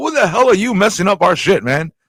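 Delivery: riled-up, pissed-off tone. Retelling a reply to the class teacher: imitating an angry retort. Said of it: "We're like all pissed off".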